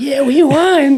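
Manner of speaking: excited tone pitched very high. Act out the switch of tone you were waiting for from him, imitating a high-pitched tone. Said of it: "get that high pitched tone".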